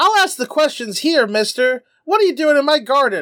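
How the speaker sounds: put-on small, adorable little girl voice. Recapping a scene, the speaker quotes Chi Chi confronting the guys: Chi Chi's adorable voice. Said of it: "in her adorable voice goes".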